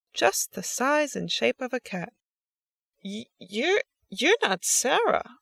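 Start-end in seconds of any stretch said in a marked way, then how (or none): 3.0-5.3 stumbling, halting, stuttered, stammering delivery. Facing a cat-shaped shadow that has just stepped out, stammering. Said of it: "Lucia stammered".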